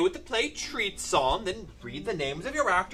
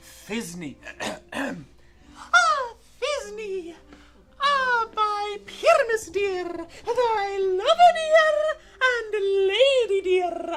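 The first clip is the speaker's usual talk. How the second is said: put-on tiny voice, much higher and slower; 14 semitones higher than usual. An actor volunteers to also play Thisbe, in a monstrous little voice. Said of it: "I'll speak in a, a monstrous little voice".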